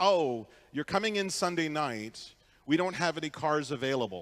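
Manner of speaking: plain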